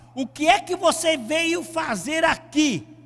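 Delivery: high, loud shouting.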